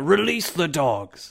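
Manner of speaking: high, loud yelled-out call, projected far. Voicing a character calling out from the arena's edge: yelling out. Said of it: "he yells out".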